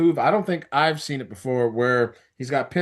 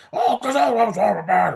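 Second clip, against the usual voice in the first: put-on angry voice, pitched higher; 6 semitones higher than usual. Imitating an angry Logan Paul who wants Joe Hendry: imitating Logan Paul being mad. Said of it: "Logan Paul is mad".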